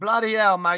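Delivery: put-on accent slipping into Australian. Doing a bit, the speaker says this and drifts into an Australian accent. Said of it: "it ends up going into an Australian accent".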